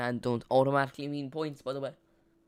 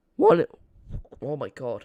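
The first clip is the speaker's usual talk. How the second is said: voice breaking mid-word on one; 11 dB louder than usual. Streamer discussing player substitutions on stream, voice cracking. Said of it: "my voice has been cracking so much".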